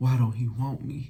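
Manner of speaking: play-acted sad, hurt, wounded little-brother pleading tone. Showing how he said it, like talking to Uncle Phil, as a sad Will Smith impression. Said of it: "Like like Will Smith talking to Uncle Phil".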